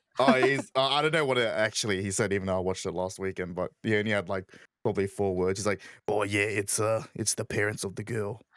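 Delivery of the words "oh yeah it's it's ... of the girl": put-on Australian accent, slower. Quoting a line from something he watched last weekend, in an Australian accent. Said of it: "I picked up the Aussie accent there".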